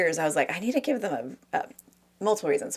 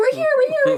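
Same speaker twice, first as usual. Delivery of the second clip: higher, louder put-on yelling little character voices; 9 dB louder than usual. Retelling the movie scene on the dandelion: yelling like the Whos. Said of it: "yelling, yelling, like".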